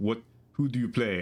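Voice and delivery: put-on odd, weird, off-kilter French accent. Quoting a man who asked about StarCraft, in a weird French accent. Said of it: "kind of like weird French accent".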